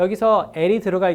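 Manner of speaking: plain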